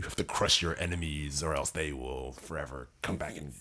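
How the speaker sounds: put-on manic storyteller voice. Imitating how the audiobook narrator reads a law: imitating a maniacal audiobook narrator. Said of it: "he's just sound like".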